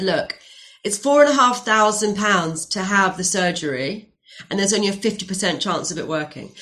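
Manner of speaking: ordinary delivery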